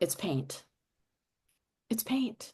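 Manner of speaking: muttered under the breath. Retelling a remark made while a woman praised the stone, muttered under breath. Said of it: "literally under my breath".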